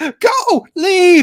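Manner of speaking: very high, loud, frantic blurted outburst. Retelling a scene where the character freaks out: Yoda freaking out. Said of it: "Yoda just starts freaking out and says".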